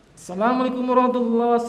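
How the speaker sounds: very fast, rushed, rattled off, words run together. Demonstrating a greeting delivered too fast, said very quickly. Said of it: "Sarian itu terlalu cepat".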